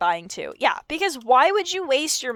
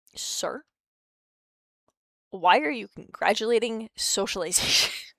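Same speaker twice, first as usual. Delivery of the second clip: put-on offended tone; 3 dB quieter than usual. Retelling a reply to a therapist's praise: retelling being offended. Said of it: "I was genuinely taken aback and a bit offended".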